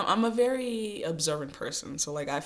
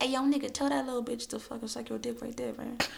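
put-on high, rough young fuckboy voice; 8 semitones higher than usual. Retelling the inner fuckboy voice in the head: imitating inner fuckboy voice. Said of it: "he be in my head like".

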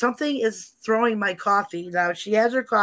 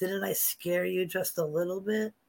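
little sneaky put-on voice, quieter; 2 semitones lower, 9 dB quieter than usual. Retelling what a voice said to scare, imitating a little sneaky voice. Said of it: "he had that little voice that said".

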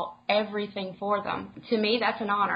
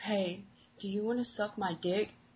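put-on crude voice, quieter; 7 dB quieter than usual. Retelling what callers say when they connect: imitating a crude caller. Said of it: "the next thing you hear is".

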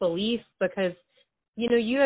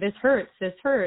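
normal talking voice

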